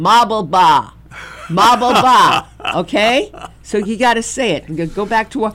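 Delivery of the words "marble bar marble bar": Brooklyn accent, louder and slower. Speaker shows the crowd how to say the phrase: brooklyn accent. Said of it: "Say it in the Brooklyn accent where I was born".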